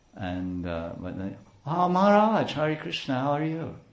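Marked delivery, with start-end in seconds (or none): 1.6-3.7 high, sugary, sickly sweet, fake-nice delivery. Describing how a person he dislikes greets him, imitating a sweet, nice greeting. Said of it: "they say it so sweetly and so nicely".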